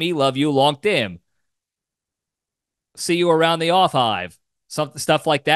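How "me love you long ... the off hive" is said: text-to-speech robotic computer voice. Retelling a TV episode where a little robot speaks typed sentences, robot voice. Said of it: "the robot says it".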